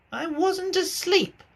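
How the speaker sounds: very high-pitched, hoarse, raspy, feeble voice. Reading a story aloud, voicing the Dormouse: hoarse, feeble Dormouse voice. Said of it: "he said in a hoarse, feeble voice".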